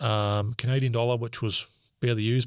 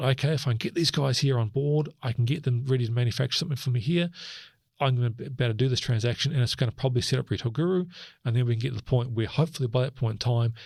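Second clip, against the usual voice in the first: plain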